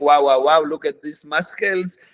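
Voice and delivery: speaking with an Israeli accent. Showing a stereotype people expect of the speaker, in a mock Israeli accent. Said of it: "talk like this to be like very Israeli".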